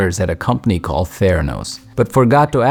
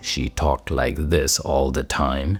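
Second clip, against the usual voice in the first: forced, very low, deep baritone; 7 semitones lower, 7 dB quieter than usual. Describing a company founder's manner of speaking: Elizabeth Holmes deep baritone voice. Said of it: "she had a deep baritone voice".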